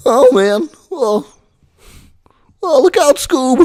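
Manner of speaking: very high-pitched, loud cartoon voice. Practicing a cartoon voice that still needs work: Shaggy voice. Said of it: "so this voice needs some more practice".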